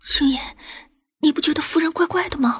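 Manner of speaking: quivering, unsteady, trembling, quavering voice. Luo Kui grabs Qingying's hand and asks her a question, in a trembling voice. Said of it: "颤声道".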